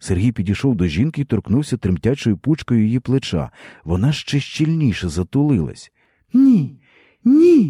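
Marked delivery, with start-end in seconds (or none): 6.3-7.7 shrill, very high, loud calling out. Narrator reads the woman as Serhiy touches her shoulder, crying out. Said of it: "гукала вона".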